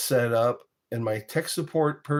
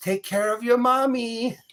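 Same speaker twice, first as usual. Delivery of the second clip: put-on very high-pitched Caribbean accent; 11 semitones higher than usual. Retelling what someone said while looking at the speaker, imitating a Caribbean accent. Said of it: "she looks at me and says".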